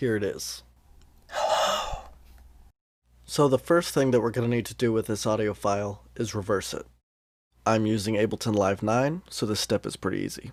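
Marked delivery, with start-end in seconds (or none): 1.3-2.0 creepy, spooky, eerie, unsettling voice. Playing a recording of saying hello for an effect demo: creepy voice. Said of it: "saying hello in a creepy voice".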